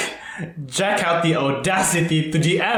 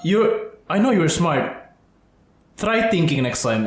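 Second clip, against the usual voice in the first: ordinary talk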